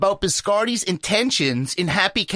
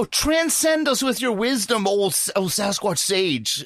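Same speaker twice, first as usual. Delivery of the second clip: usual speaking voice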